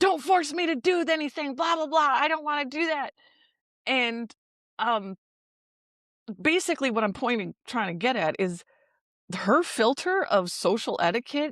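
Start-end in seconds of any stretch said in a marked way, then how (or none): 0.0-3.1 flipping out, high, agitated, angry ranting. Retelling how the listener's mom flipped out: mimicking an angry outburst. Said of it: "Your mom flipped out".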